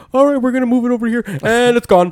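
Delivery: shrill, very high cartoon banker voice. Describing a cartoon episode to others in conversation, doing a South Park bank scene impression. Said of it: "That was the best impersonation".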